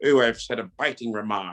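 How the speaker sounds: put-on British accent from old movies. Joking about how British people talked in old movies, doing that accent. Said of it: "They used to always talk like this".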